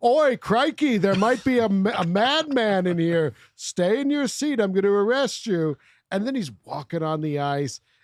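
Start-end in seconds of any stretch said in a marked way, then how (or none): 0.0-5.8 stadium announcer call over a PA, pitched up high. Retelling a movie scene, announcing over the stadium speaker: imitating Mel Gibson as announcer. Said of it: "Mel Gibson gets on the horn ... he's just like".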